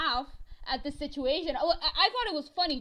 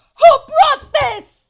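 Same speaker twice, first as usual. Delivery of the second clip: very high, very loud, top-of-the-lungs shriek; 13 semitones higher, 21 dB louder than usual. Telling a story about a teacher's reaction, retelling a scream. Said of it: "she just screams at the top of her lungs".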